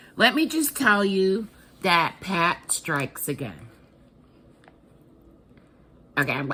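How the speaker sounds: choked up, close to tears. Thanking viewers for a surprise package gift: close to tears. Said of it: "I'm trying not to tear up".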